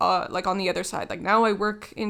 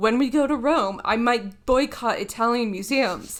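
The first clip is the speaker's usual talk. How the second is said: ordinary talk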